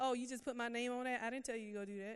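put-on sarcastic voice. Retelling what the Holy Spirit said to them: imitating a sarcastic voice. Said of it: "he's very sarcastic".

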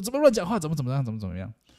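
mock angry scolding, high and swooping pitch. Retelling the mother's reply to a child's question: imitating an angry mother. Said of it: "我妈说很生气".

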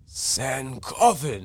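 put-on old man character voice. Speaker repeating a character's line to friends, Gaara impression sounding old. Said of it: "you sound like an old dude".

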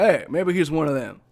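normal talking voice

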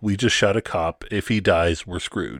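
ordinary delivery

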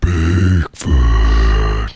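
very deep, beastly creature voice. Joking about how a creature would talk: Bigfoot voice. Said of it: "that's how Bigfoot talks".

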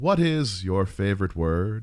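very slow, deliberate, every word drawn out. Asking a guest a questionnaire question: James Lipton impression. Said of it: "my best James Lipton impression".

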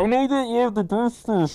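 high, muffled voice. Imitating a guy with a helmet on, quoting his line: muffled helmet voice. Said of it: "It's muffled".

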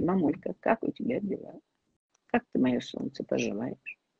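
warm, kind, soft, breathy and whispery affectionate tone. Suggesting how to greet mom on a morning call, kind, warm tone. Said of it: "вот таким добрым, красивым тоном".

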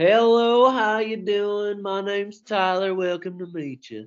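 put-on charming American Southern accent.

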